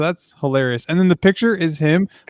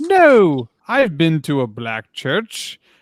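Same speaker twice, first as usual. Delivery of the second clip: put-on impression voice, drawn out slowly. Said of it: "And he was like".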